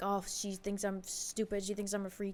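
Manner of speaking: soft, flustered, embarrassed muttering.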